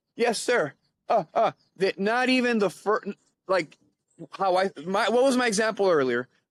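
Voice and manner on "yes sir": put-on frozen, scared stammer, higher, slower. Explaining freezing up, acting out someone facing a wallet demand: acting out a frightened stammer. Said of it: "And they just stand there".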